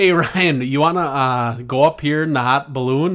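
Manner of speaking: very loud, failed put-on Irish accent. Riffing with others, calling out to someone named ryan in a bad irish accent. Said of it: "That's not an Irish accent".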